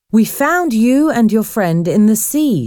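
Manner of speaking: ordinary talk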